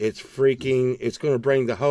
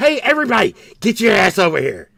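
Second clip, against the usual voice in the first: loud, pitched-up hollering yell; 8 semitones higher, 6 dB louder than usual. Retelling how he yelled to call his employees over, retelling a yell. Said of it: "I've gotten in trouble for yelling".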